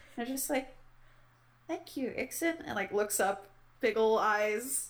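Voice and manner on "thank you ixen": tiny, hushed, very quiet high voice. A character given a new book thanks the giver: the quietest little voice. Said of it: "the quietest little voice".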